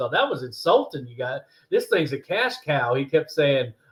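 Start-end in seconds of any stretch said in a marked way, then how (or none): 0.1-2.9 thick, heavy Southern drawl, laid on thick. Retelling how he answered the offer: imitating a heavy southern drawl. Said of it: "he had a heavy Southern drawl".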